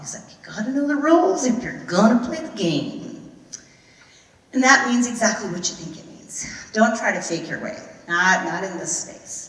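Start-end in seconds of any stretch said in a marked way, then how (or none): 0.3-3.3 easy, high Arkansas southern drawl. Retelling an instructor's advice: imitating a southern drawl. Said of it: "he said it with this nice southern drawl".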